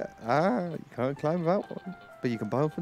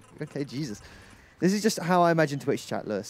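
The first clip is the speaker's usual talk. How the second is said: plain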